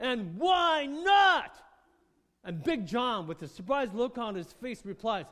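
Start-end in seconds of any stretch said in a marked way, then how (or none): 0.0-1.6 loud, high, furious, enraged bellow. Telling a story, voicing the enraged bus driver glaring back: retelling a bellowed shout. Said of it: "he bellows out".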